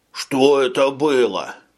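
groaning moan. Narrator reads a character stumbling into the cabin holding his forehead: groaning. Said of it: "простонал Шойбле".

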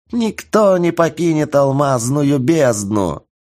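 joyful, gleeful, high screeching goblin voice. Narrating a fight, the narrator voices a goblin's cry as a gleeful goblin shriek. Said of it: "радостно верещал гоблин".

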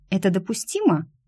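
ordinary delivery

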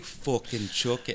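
put-on little girl voice, sounding grown-up. Friends recall a little girl's line, imitating a swearing little girl. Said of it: "a 3 or 4 year old girl talking".

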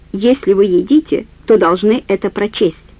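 ordinary delivery, nothing marked

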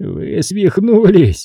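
quavering shaky outburst. A man accused of having a girl killed answers his accuser, in a trembling voice. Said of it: "дрожащим голосом произнес он".

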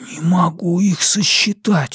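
slow, high whisper under the breath. During a film, a man looks into a found wallet, whispered. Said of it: "прошептал он".

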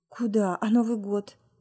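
plain reading voice

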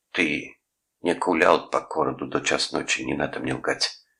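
ordinary delivery

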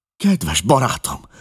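sudden high-pitched exclaiming cry. The narrator steps toward his bedridden friend, crying out to him. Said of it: "kiáltottam".

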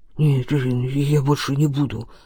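low, slow, frightened, terrified mumble under the breath. Narrator reads Ivan's line as he freezes in front of Stefan: muttered. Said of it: "пробормотал он".

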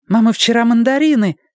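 gleeful, joyful exclamation, very high-pitched. Amid noisy classroom decorating, someone calls out to their mother in a joyful voice. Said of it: "чей-то радостный голос".

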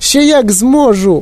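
tiny, thin, high squeaky voice. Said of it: "пискнув тоненьким голосочком".

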